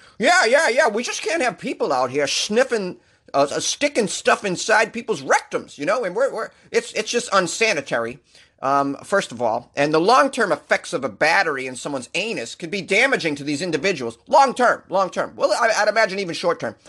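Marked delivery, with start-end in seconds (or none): 0.2-15.4 over-the-top, crazy, swooping lawman voice. Speaker quoting the FBI on a news story, crazy FBI voice. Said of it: "i'm going to use a crazy fbi voice".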